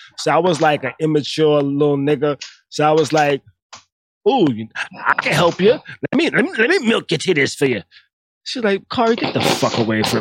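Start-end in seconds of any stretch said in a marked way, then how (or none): 4.3-7.9 put-on Southern accent. Retelling what he said to her in his early twenties, in a Southern Sanford and Son voice. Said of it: "in that Southern Sanford and Son voice you just used".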